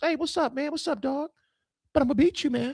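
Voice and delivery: high, put-on casual swagger, very high and playful. Imitating one coach greeting another before beating him: imitating a coach's casual greeting. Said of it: "I don't know if they talk like that".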